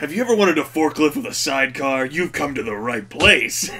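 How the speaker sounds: commercial announcer voice over a PA system. Performing an auto center ad over the PA system, like a commercial on the PA. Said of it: "a commercial on the fucking P A system".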